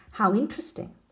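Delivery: ordinary delivery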